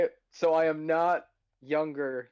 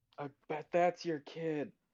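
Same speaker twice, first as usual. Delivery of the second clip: hushed theatrical stage whisper meant to carry; 7 dB quieter than usual. Making an aside to the person telling a story, in a stage whisper. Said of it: "in my best stage whisper".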